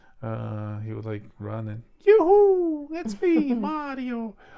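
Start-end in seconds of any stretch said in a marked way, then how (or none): 2.0-4.3 very high, loud, slow calling out. Describing how the first voiced Mario sounded when running: original Mario voice. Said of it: "gave Mario a voice".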